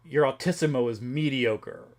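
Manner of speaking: ordinary talk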